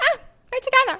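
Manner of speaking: high, put-on girly femme voice. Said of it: "the femmes that are like".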